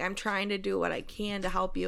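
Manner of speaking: ordinary talk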